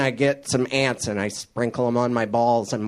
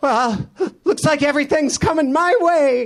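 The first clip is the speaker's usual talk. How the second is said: very high, loud, stubbornly upbeat forced cheer; 5 dB louder than usual. Speaker doing a joke, imitating a guy trying to stay positive. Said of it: "that's a guy trying to stay positive".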